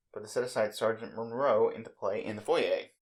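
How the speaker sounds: usual speaking voice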